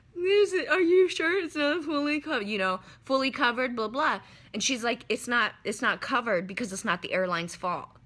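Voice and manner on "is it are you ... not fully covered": mock tearful, high, crying voice. Recounting pleading with the woman who handed her the ticket, retelling talking through tears. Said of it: "as I'm through my tears".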